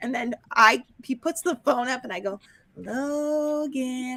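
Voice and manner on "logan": lilting, tuneful, sing-song calling tone. Retelling calling a child's name over the phone: imitating own sing-songy call. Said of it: "I'm sort of doing sing-songy".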